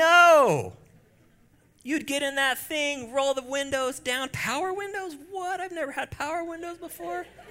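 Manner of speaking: very high, loud, giddy squeal of delight.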